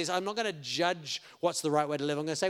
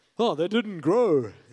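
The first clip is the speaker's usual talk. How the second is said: loud, dumb-sounding cartoon character voice; 7 dB louder than usual. Speaker explaining Jesus's parable of the footpath, in a Patrick Star dumb-guy voice. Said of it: "It's my go-to dumb guy voice".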